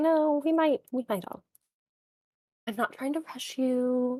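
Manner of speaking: motherly, coaxing, nudging voice. Voicing a character urging the others to leave: very mom way. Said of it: "in that very mom way".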